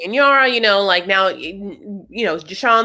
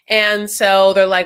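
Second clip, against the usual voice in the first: usual speaking voice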